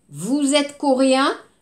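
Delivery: upward pitch lift at the end of "coréen". French phonetics lesson, the question said with pitch rising at the end. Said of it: "On va monter".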